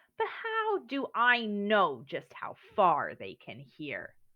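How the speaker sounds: scornful sneer with swooping pitch. Narrator reading a bear's reply to a rabbit, sneering. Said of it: "said the bear with a sneer".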